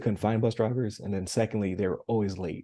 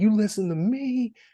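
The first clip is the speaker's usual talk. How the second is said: put-on very high, stretched-out, drawn-out screaming; 13 semitones higher, 4 dB louder than usual. Retelling how a crossing guard yelled at a driver: imitating someone screaming. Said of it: "screaming at her window".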